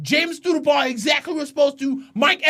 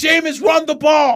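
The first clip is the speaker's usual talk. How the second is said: play-acted loud, frustrated yelling; 5 dB louder than usual. Retelling yelling at the TV during a game: imitating own yelling. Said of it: "I'm yelling at the T V".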